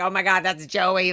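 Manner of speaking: ordinary talk, nothing marked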